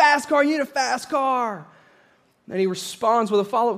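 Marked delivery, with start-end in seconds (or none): 0.0-1.7 put-on high-pitched, excited shrieking like eager children. Retelling a commercial where kids answer a question: imitating kids screaming. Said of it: "They just start screaming".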